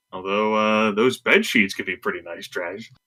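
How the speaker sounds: normal talking voice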